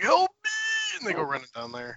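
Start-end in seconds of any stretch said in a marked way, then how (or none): 0.0-1.0 high-pitched, choking, panicked shout. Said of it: "He's like".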